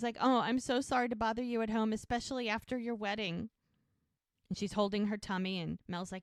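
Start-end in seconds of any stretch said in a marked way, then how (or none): 0.2-3.5 put-on tearful voice. Retelling a tv scene where a pregnant woman arrives: imitating someone crying. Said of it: "And she's crying".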